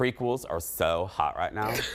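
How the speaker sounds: put-on low-pitched valley girl voice. A host introducing the hot dish segment, in Valley Girl voice. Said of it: "I did it in my Valley Girl voice".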